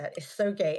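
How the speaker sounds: ordinary talk, nothing marked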